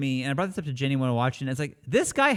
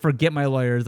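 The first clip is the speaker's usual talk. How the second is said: ordinary delivery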